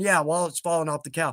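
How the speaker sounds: normal talking voice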